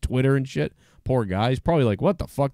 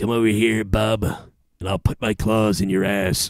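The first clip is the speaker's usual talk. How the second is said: put-on threatening cartoon hero voice; 3 semitones lower than usual. Thanking a subscriber, the host jokes back in cartoon Wolverine voice. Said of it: "Remember the fucking cartoon guy's voice?".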